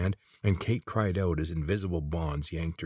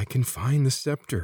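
gasped, much higher in pitch and louder; 7 semitones higher, 4 dB louder than usual. A character answers the old man, gasped. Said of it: "Corvin gasped".

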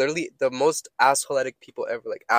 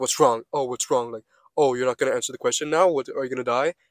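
put-on mocking, taunting voice. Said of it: "And then she was like".

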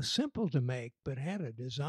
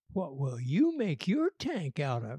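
said slyly; 3 dB louder than usual. She puts a question to the boys, slyly. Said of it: "she said slyly".

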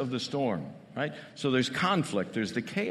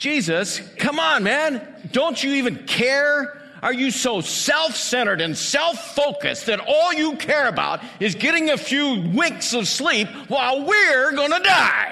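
very high, very loud, drawn-out exclaiming outcry; 12 semitones higher, 10 dB louder than usual. Retelling the disciples waking Jesus in the storm: acting out the disciples' exclaimed outcry. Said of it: "It would probably look something like".

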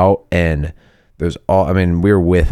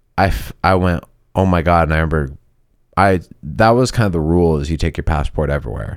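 plain

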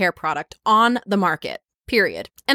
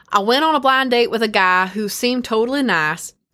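put-on country accent; 3 semitones higher than usual. Reading out Matilda's online dating saga in first person, in a country accent. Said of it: "I'm going to use a country accent".

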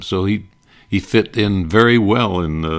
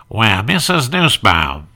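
nasal put-on radio host voice, pitched higher; 3 semitones higher than usual. Retelling a radio bit, doing the knock at the door: nasal Fred Allen voice. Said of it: "in the nasal sound of Fred Allen".

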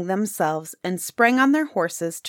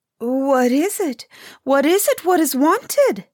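just-woken voice, pitched up; 7 semitones higher, 4 dB louder than usual. The eldest princess answers a tap on her window, just woken up. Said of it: "roused from her sleep".

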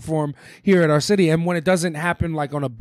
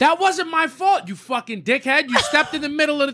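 very high, all-out, furious angry screaming; 10 semitones higher than usual. Retelling yelling at old people who stepped in front of the bike, re-enacting screaming. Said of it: "I'm screaming on 2nd Avenue".

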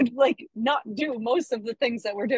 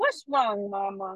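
put-on, babyish toddler-style baby talk; 3 semitones lower, 4 dB quieter than usual. Retelling how she answered her mad mom, in put-on baby talk. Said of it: "talk like a baby to her".

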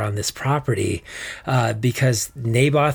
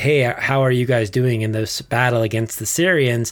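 ordinary talk

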